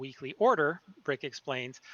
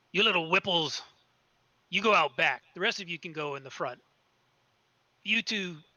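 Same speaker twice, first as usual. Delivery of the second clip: rough, loud, gruff, commanding voice; 4 semitones higher, 3 dB louder than usual. Storyteller voices one of the figures at the front door, loud, gruff voice. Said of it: "speaks up in a kind of a loud and gruff voice".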